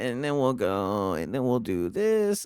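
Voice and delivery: soft, painter-like put-on designer voice. Show the others the voice he always does, mimicking his designer voice. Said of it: "he always does like the".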